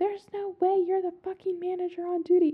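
mild, high-pitched, irate half-yelled outburst. Retelling a customer who refuses to believe she's the manager, imitating her shouting. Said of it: "Shouting, like, to the top of her lungs".

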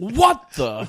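very loud, very high, over-the-top startled yell. Acting out being interrupted while wearing headphones: imitating own overdone wrestler-style reaction. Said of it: "I sell it like I'm a wrestler".

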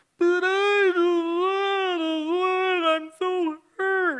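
put-on very high, very slow, whiny fake fit. Retelling how she complained to them, imitating her fake fit. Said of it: "she threw a fake fit".

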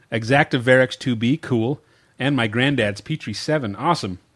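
ordinary talk

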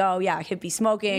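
normal talking voice

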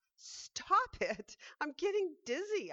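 high-pitched shrieking scream. A teacup being spun round on a spinning wheel cries out, screaming. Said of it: "I screamed".

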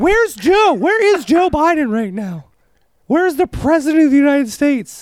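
put-on feminine voice, pitched way up. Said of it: "starts talking in a high womanly accent".

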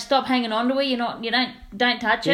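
ordinary delivery

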